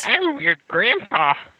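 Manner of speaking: put-on very high-pitched elderly woman's voice. During a podcast intro, a host answers his co-host in an old lady voice. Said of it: "you sound like an old lady".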